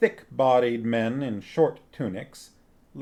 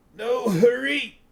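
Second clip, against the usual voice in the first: put-on very high, wheezy voice that cracks; 11 semitones higher than usual. Narrating a story, reading Wolf's reply in a wheezing, cracking voice. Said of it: "Wolf said in a wheezing, cracking voice".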